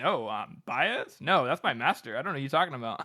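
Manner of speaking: baffled, genuinely puzzled, confused tone. Retelling a book scene where a herald is questioned: imitating a confused character. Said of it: "genuinely confused".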